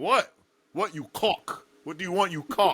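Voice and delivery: put-on British accent. Imagining his reply when called with 'yo, bruh': British accent impression. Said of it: "sound so British when you say conk".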